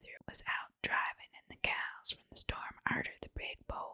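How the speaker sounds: plain reading voice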